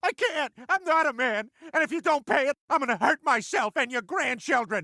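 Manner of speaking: sobbing. A man begs another man to pay his mortgage, crying while pleading. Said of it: "I know you're crying".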